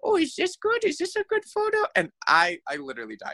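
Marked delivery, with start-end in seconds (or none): 0.0-1.8 put-on very high, tiny babyish voice. Retelling a friend photographing her own nose: baby voice. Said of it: "started doing a baby voice of like".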